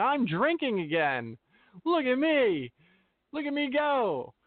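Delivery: showy, high, drawn-out screaming. Mocking people who show off their drinking: imitating someone screaming.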